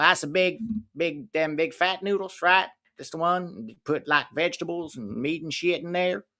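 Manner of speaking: put-on heavy Southern US accent, thickly laid on. Retelling how they order food, in a thick Southern American accent. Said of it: "thick American accent at first ... like Southern".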